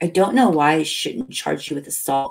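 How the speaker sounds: usual speaking voice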